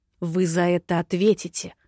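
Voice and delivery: spoken in a hiss. Serpenta, ordered to leave the estate, answers the man, hissed. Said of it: "прошипела она".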